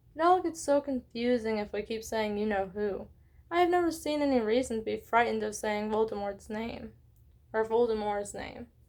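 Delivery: plain reading voice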